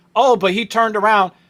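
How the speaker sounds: normal talking voice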